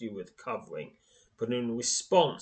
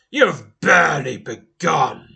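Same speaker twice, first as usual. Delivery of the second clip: thundering, booming, rough, very loud giant voice; 2 semitones higher, 12 dB louder than usual. A narrator reads the bronze giant's echoing reply: deep booming giant voice. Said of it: "booms the deep, resonating voice".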